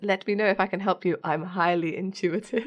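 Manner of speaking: plain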